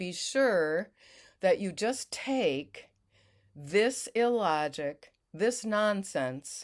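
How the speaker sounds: plain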